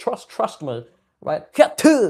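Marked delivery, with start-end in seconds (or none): 0.0-0.8 half-hearted, weak put-on country accent. Retrying a phrase for an accent: put-on country accent, not country enough. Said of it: "that was kinda country, but not country enough".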